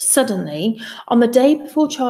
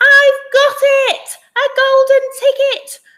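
shrill, very high, very slow, drawn-out shout; 6 dB louder than usual. Reading a story aloud, a worker finding a golden ticket: yelling. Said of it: "one of my women workers yelled".

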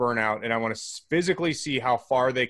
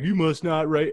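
put-on rural Southern country accent; 4 semitones higher than usual. Voicing people angry about a Facebook post, country accent. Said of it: "I don't know why I give it a country accent".

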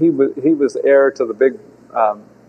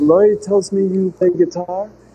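slightly higher-pitched broken English; 7 semitones higher than usual. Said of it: "he speaks broken English and he says".

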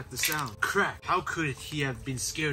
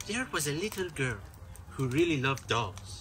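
put-on Irish accent. Asked if ready, starting a story in an Irish accent. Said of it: "Why are you Irish?".

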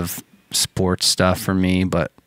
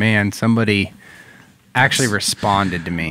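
plain

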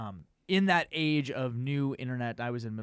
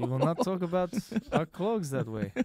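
put-on Russian accent, higher pitched; 5 semitones higher than usual. Joking about offending people over clogs: Vladimir Putin impression. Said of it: "Vladimir Putin is like".

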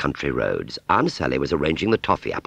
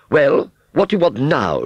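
very high, loud, haughty, impatient voice; 11 semitones higher, 6 dB louder than usual. Reading a story aloud, the aunt, interrupted mid-flirtation, is demanding impatiently. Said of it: "she demanded impatiently".

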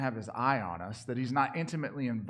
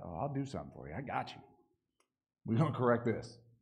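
mock heavy, obvious sarcasm with swooping pitch; 3 dB quieter than usual. Acting out God's reply to the people: sarcastic voice of God. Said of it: "you just hear the sarcasm".

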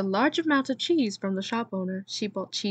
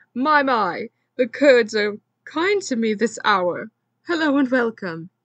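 very loud, booming bellow; 2 semitones higher, 8 dB louder than usual. A shop owner locks eyes with Rita and greets her, bellowing. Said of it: "he bellowed".

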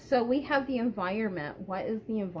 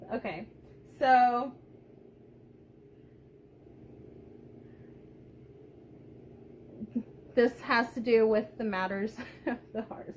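swooping speech broken by laughter. Reading a tarot card right after a joke about yoga, laughing. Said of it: "I'm laughing about the yoga thing".

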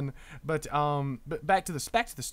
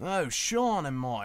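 half-baked put-on Australian accent. During a game with teammates, speaker talks in a half-baked Australian accent. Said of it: "so now I can just do a half-baked Australian accent".

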